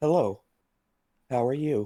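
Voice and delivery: creepy robotic voice. Asked by a friend to do his robot voice, robot voice. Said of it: "You know my robot voice I creep people out with all the time?".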